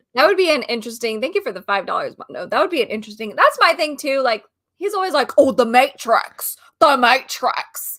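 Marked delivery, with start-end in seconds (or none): 5.3-7.9 loud, very slow, heavy, deliberate, drawn-out words. Mocking a public figure's catchphrase: imitating Andrew Tate. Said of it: "that's a spot on impression".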